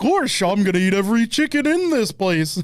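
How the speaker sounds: put-on goofy cartoon dog voice. Trading cartoon character voices, doing a Goofy voice.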